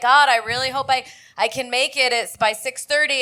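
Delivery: normal talking voice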